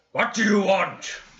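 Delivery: angry man yelling. Voicing a wizard shouting down from a window above: angry man voice. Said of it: "It's more just like angry man".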